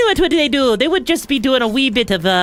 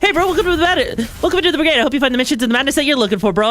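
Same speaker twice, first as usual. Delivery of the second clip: fast-talking, rapid-fire delivery. The speaker demonstrates their usual greeting, speaking really fast. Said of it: "I know I speak really fast sometimes".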